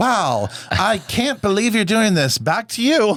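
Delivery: mock heartfelt, gushing, high, earnest sincere tone. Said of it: "you sounded so sin-".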